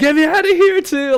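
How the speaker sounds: high, loud scream. Retelling another person in the tank: imitating someone screaming. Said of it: "I hear Vel screaming".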